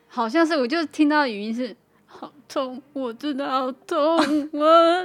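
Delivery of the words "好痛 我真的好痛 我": put-on pained crying. Imitating a friend's late-night voice message, imitating someone crying in pain. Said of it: "不用这样演".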